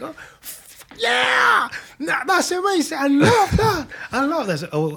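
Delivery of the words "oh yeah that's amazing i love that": mock very high, loud, piercing shriek. Retelling how a woman reacted to him, retelling a loud scream. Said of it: "she started screaming like so loud".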